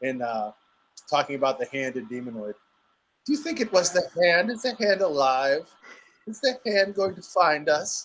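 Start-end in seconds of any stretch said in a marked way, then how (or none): 3.2-8.0 high, worried voice rising on each phrase. Imitating a voice heard in a documentary: Samantha Eggar voice. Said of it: "I hear [name] doing her voice".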